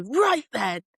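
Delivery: acted, stern, no-nonsense scolding tone. Retelling catching younger cousins swearing: imitating telling someone off. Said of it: "I'd have a go at them for saying it".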